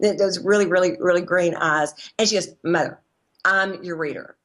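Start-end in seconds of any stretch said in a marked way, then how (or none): 2.6-4.2 mock deadpan, flat and slower. Recalling a woman's reply, the speaker quotes her line, imitating a deadpan delivery. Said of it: "real deadpan".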